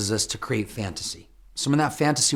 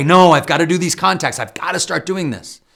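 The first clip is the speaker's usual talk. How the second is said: put-on raised, angry, determined, insistent tone; 5 semitones higher, 6 dB louder than usual. Acting out talking back to one's own distracting brain, angry tone. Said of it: "And in an angry tone".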